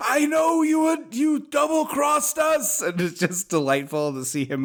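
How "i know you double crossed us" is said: put-on unhinged yell, much higher, slower. Recapping a film, acting out a man's outburst in unhinged Loomis-style shouting. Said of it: "going unhinged like that".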